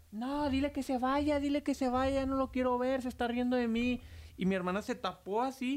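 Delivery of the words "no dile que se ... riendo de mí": high, frantic, terrified screaming. Recounting someone hiding behind the curtains, the speaker retells a terrified scream. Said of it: "y empezó a gritar".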